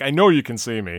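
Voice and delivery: ordinary delivery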